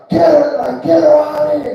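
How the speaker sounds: put-on yell. Telling a story about a ruckus in a limousine, quoting a man: retelling a yell. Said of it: "He's yelling like".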